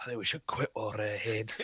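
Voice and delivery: hushed whisper. Playing Jim Carrey, who turns around and speaks in a whisper. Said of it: "quietly in his own voice, as a whisper".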